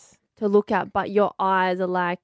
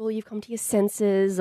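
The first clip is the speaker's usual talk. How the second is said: usual speaking voice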